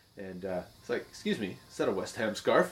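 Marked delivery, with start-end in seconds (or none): 1.1-2.8 put-on British-accented voice. Retelling a stranger asking about a scarf: imitating a British accent. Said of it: "with a British accent".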